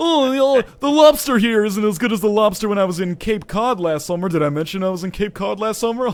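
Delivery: snooty, pompous put-on tone. Joking as a snob bragging about a vacation: mock pompous voice. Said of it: "it's pompous as hell".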